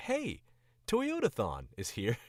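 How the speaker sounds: standard American commercial announcer voice, loud and swooping. Explaining what Standard American sounds like, demonstrating a standard American commercial voice. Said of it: "it's a commercial voice".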